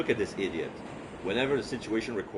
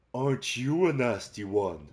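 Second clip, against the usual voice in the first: slow, hateful, mocking rasp with a sneer; 3 semitones higher, 3 dB louder than usual. Reading a shadowed figure taunting the narrator: raspy, hateful mocking voice. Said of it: "Her voice is raspy and androgynous, her tone hateful and mocking".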